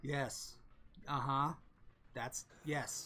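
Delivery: low, flat, dry, expressionless deadpan murmur. Retelling how he answered a question, imitating his deadpan reply. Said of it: "he's kind of says that deadpan".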